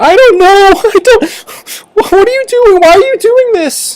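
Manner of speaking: very high, half-crying voice. Voicing a woman being shaken for answers about a call: crying a little. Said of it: "she's crying a little bit".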